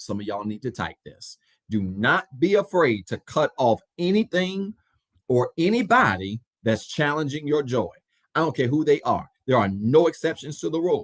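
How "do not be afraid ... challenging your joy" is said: slow, deliberate, drawn out word by word. Repeating advice to listeners so they can type it down; said slowly. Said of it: "I want to say it slow".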